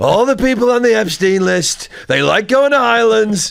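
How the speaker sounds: brash drawl, slightly high-pitched. Joking about prisons, the speaker acts out his reply: Trump impression. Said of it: "That was my best Trump yet".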